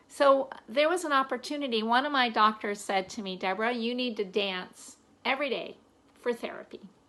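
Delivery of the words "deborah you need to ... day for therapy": ordinary talk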